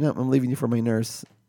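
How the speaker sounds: ordinary talk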